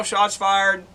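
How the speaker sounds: normal talking voice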